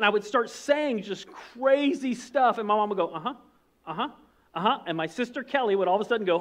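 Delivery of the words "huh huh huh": distracted, absent-minded, automatic-sounding uh-huhs. Retelling how Mom answered without listening: imitating Mom answering without listening. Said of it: "you weren't paying any attention".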